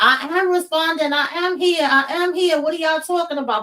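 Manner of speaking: high-pitched yelling and screaming. Recounting lying in a hospital bed, she retells screaming to the doctors: retelling a scream. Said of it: "And I'm screaming to them like".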